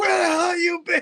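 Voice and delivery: play-acted, very high, shrill in-your-face scream. Retelling how a stranger came up close while he set up, imitating someone screaming. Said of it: "just starts screaming at me".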